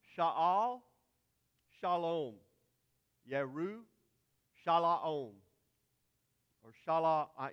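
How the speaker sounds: loud Hebrew in a Texas drawl. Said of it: "with the Texas accent".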